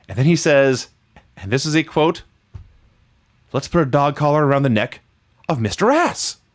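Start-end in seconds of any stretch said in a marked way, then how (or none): 3.5-6.4 put-on gleeful voice. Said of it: "The glee in [name]'s voice".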